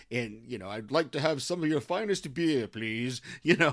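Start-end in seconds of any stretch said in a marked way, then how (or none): 0.7-3.2 put-on grown-up British accent. Recalling a scene from the movie, the speaker mimics him in a fake adult British accent. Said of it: "trying to do that whole adult British accent".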